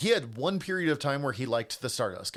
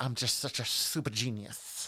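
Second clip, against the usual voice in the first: put-on lisping southern wrestler voice, lower and quieter; 3 semitones lower, 5 dB quieter than usual. Retelling an impression of a boastful wrestler: Dusty Rhodes impression. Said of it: "Paul Heyman's impression of Dusty".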